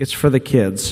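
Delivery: gentle, calm, soothing reassuring voice. Retelling how Diane answered his request to use the Zen Den; imitating Diane's soothing voice. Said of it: "in her calming, soothing voice, says".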